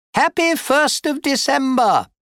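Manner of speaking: bright, beaming, very high cheerful tone. A father walks into his son's bedroom with a breakfast tray, beaming. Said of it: "Trundle beamed".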